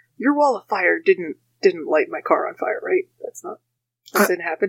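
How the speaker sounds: quiet muttering under the breath, aside. Stan speaks to Fletcher, muttering under his breath. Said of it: "really under his voice and goes".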